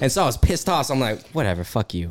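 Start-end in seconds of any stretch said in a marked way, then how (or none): 1.3-2.1 acted mumbled muttering under breath. Telling a friend how a woman took her spot, the speaker recalls her reply, retelling an under-breath mutter. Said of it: "under my breath".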